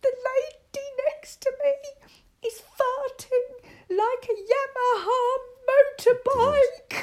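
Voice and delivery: put-on, very loud, very high words through laughter. Retelling what Mum said on the phone: imitating someone laughing while talking. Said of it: "she was crying her eyes out with laughter".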